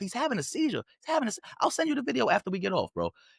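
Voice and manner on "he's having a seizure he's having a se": mock yelling, higher. Retelling a video where people filming shout at agents: imitating people yelling. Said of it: "they're yelling".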